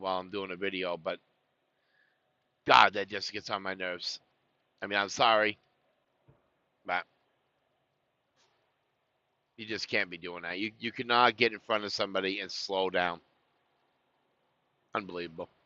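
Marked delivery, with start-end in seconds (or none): 1.0-15.5 mad, fed-up, angry venting rant. Making a video after someone got in front and slowed down: angry. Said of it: "I usually try not to get this angry".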